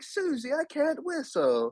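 put-on very high-pitched British accent. Retelling a scene from a TV cartoon, the speaker imitates Peppa Pig's British accent. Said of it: "you know how they have that accent too?".

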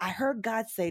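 ordinary delivery

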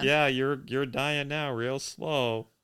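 put-on gloating voice. Retelling the villain's line to the dying hero: imitating a gloating villain.

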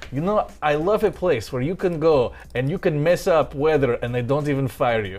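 put-on Russian accent in English. Quoting what a man who owns the place said to her, in a Russian accent impression. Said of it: "I'm going to do a Russian impression".

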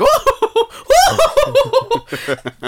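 very high, slow, swooping, drawn-out silly laugh. Retelling how the live-action Santa starts acting silly: imitating a silly live-action Santa. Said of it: "he just starts doing silly shit".

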